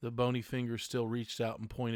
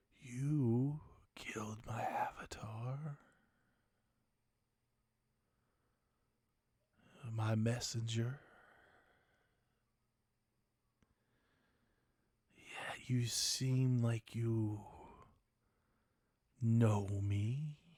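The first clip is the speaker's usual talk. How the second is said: low husky whispered voice. Narrator voicing a whisper heard from all around the listeners, deep husky whisper. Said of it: "A deep, husky whisper".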